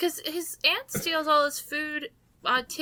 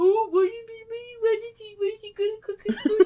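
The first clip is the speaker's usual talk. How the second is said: scornful, derisive, mocking parroting, pitched up; 7 semitones higher, 4 dB louder than usual. Complaining about being questioned over the book: mocking imitation of the other speaker. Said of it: "And then I get called to".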